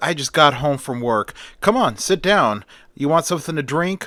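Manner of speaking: ordinary delivery, nothing marked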